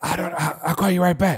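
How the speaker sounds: acted whispering voice. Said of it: "she would answer the phone and literally be whispering".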